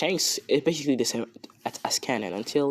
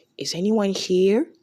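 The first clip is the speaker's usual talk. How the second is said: put-on small-child voice, much higher; 7 semitones higher, 5 dB louder than usual. The speaker acts out a scene as four-year-old Luffy: four-year-old Luffy voice. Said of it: "he's only 4 years old".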